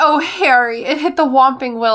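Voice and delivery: emotional, gushing outburst. Speaker praises a book character's emotional dialogue and acts it out: imitating emotional Hermione. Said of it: "Hermione's dialogue is written when she gets emotional".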